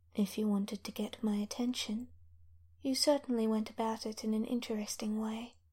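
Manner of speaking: smooth, silky, soft-spoken, even-flowing voice. In a story, a voice speaks to the dreaming Teague, smooth voice. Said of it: "a smooth voice says".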